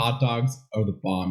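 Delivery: ordinary talk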